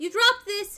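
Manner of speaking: put-on small girl's child voice. Voicing a small girl who looks up at a player: small girl's voice. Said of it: "and she goes".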